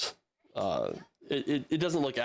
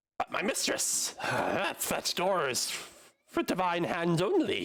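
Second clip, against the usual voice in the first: silly goblin voice, much higher pitch; 7 semitones higher than usual. Narrating a game, voicing a goblin who perks up to address his mistress, clownish goblin voice. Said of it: "this goblin, just like a fucking clown. he perks up and he goes".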